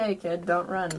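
ordinary delivery

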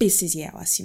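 angry delivery in Creole. Showing how the film line would sound in Creole: angry line in Creole. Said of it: "you hear it in my voice".

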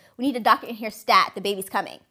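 ordinary talk

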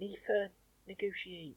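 put-on very quiet, high-pitched child's voice with Bristol accent. Retelling an old school bit, imitating Nathan's accent. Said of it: "like bloody Nathan's accent that I always used to do".

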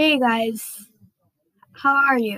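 American accent. Showing off different accents in an intro, now the american accent. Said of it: "or my US accent".

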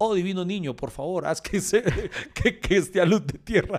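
slow, sarcastic, ironic, mocking put-on voice. Speaking to miners, mimicking their prayer when earth falls on them, ironic mocking imitation. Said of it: "lo hice irónicamente todo el tiempo burlándome".

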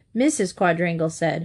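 ordinary delivery, nothing marked

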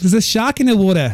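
imitated Australian accent. Dared to prove the claim, the speaker shows off an australian accent. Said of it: "I can do a great Australian accent".

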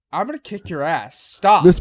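loud, playful, joking, teasing menace. Bragging about beating a game, the speaker mock-threatens the listener. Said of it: "Why are you threatening me?".

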